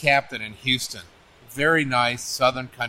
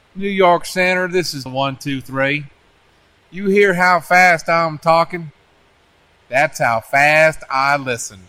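very slow, drawn-out, deliberate speech with raised voice; 4 semitones higher, 6 dB louder than usual. Retelling a radio call to New York Center, imitating slow speech. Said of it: "he just spoke real slow".

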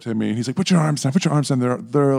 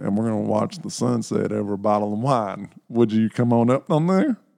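put-on cowboy accent. Retelling your own invitation on a first date, in a put-on cowboy accent. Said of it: "Now you have a penthouse with that accent".

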